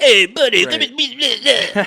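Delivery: put-on Northeast Italian mobster accent, very high. Describing regional ways of talking, imitating a Northeast Italian mobster accent. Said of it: "the mobsters, the Italians".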